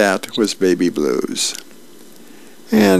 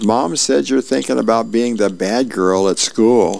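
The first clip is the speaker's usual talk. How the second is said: ordinary delivery, nothing marked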